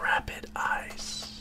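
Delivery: hushed, ultra-cool, breathy whisper. Showing a friend how the name must be said: cool whisper. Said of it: "You got to say it like a whisper. Like it's the coolest thing you've ever said".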